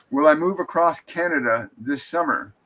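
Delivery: ordinary delivery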